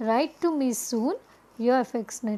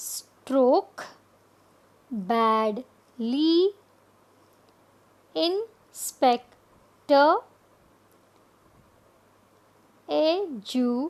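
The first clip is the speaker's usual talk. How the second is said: slow, each word broken into syllables; 3 semitones higher than usual. Explaining syllables, saying the example words slowly. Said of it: "When we say them slowly".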